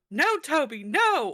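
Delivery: high, very loud, long drawn-out screams of no. Recounting how often they screamed at two people, the speaker retells a scream. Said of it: "screamed out loud".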